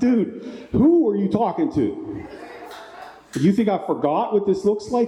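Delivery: really angry, high-pitched, accusing voice. Recounting confronting a man over something in his pocket, re-enacting being really angry. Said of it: "I got really, really angry".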